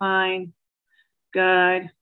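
put-on cartoon donkey voice, droning, very low and deep. Imitating someone like the donkey from Winnie the Pooh: very low tone. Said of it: "her tone was always very low, and it was like".

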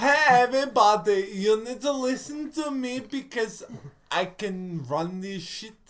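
flamboyant put-on German accent.

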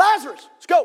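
acted out, self-assured, confident, casual tone. Acting out the call at the edge of the tomb: confidently calling out. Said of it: "He just confidently".

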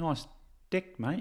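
put-on very quiet, soft, high New Zealand accent. Greeting the other speaker while practicing a New Zealand accent. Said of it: "I was practicing my New Zealand accent".

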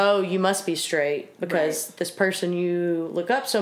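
ordinary talk

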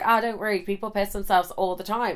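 ordinary talk, nothing marked

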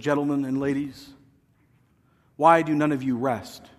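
put-on very regal, stately, old-fashioned manner of speaking. Retelling what a speaker said to a group of pastors: regal old-school Dallas Willard voice. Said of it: "in his very regal, old-school way".

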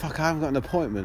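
ordinary delivery

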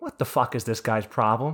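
imitated whisper. Retelling what was whispered to a dentist in the chair: retelling a whisper. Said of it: "so I can whisper to my nice dentist".

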